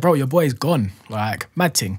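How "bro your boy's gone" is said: plain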